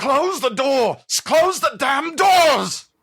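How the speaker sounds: very high, sudden, immediate yell. Voicing Captain Darrow stumbling in after a loud roar: Captain Darrow shouting. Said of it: "just shouts out immediately".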